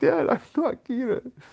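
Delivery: acted, very high-pitched, drawn-out shrieking scream. Retelling an anime scene where a character screams, imitating a screamed line. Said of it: "he's screaming".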